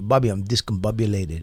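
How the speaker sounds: put-on English with a Spanish accent. Retelling what the Spanish foster brother used to say: imitating Carmelo Sanchez's Spanish accent. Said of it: "You learned English from a guy with that accent?".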